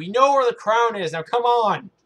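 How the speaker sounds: high, loud, full-throated yell. Voicing a companion urging players onward to the crown: Alistair yelling. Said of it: "Alistair yells at you".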